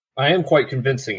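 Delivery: normal talking voice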